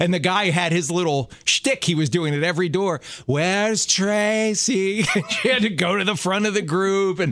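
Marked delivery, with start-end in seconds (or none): 3.3-5.0 eerie, pitched-up haunted-house guide voice. Describing a tour guide's routine at every door, mock-spooky tour guide voice. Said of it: "Like it was spooky?".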